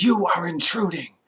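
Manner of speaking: high-pitched, shrieking, screaming monster creature voice. A game master voices a creature confronting intruders in its home, screaming creature voice. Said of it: "It screams".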